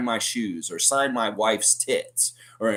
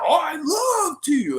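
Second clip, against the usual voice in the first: mock drunk voice, very high and very slow, drawn-out. Retell a sauced man agreeing to a fan's request for an autograph, imitating a drunk man. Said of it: "And he's sauced".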